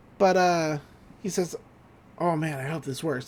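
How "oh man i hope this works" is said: muttering under the breath, quieter. Retelling a cartoon scene, quoting Robbie: muttering under his breath. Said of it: "like, under his breath".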